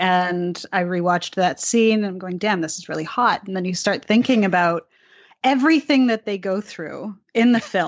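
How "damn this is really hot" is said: normal talking voice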